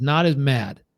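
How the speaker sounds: ordinary talk, nothing marked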